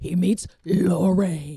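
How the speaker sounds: dramatic, booming, ominous movie-trailer narrator voice. Discussing a comedy's trailer, mimicking its ominous movie-trailer voice. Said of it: "it's the movie guy voice".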